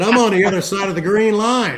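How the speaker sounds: put-on yell, high pitch. Retelling a dispute over a boarding pass, quoting what you said: retelling a yell. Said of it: "You're yelling at him".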